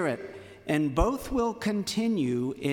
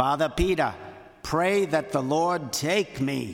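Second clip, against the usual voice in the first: put-on thick, heavy New Jersey accent. Quoting an aunt asking him to pray for her, heavy New Jersey accent. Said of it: "she spoke in her heavy New Jersey accent".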